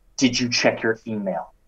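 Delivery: imitated angry tone. Retelling a phone call from an angry mentor: imitating an angry mentor. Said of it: "he calls me up just pissed".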